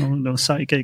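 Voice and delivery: ordinary talk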